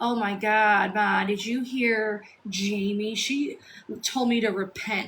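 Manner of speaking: imitated mocking laughing tone. Retelling what a woman said when she phoned her mom, imitating mocking, laughing tone. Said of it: "is poking fun at everybody and laughing".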